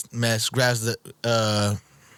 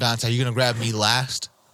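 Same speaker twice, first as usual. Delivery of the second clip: ordinary delivery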